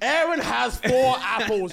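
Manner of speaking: very high, very loud, slow, drawn-out shrill scream. Imitating a teacher in an exam: imitating a teacher screaming. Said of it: "She's screaming at you".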